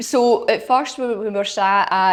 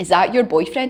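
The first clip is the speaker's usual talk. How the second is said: imitated whisper. Retelling what a man behind them at golf asked: imitating a whisper. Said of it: "the guy whispered to me being like".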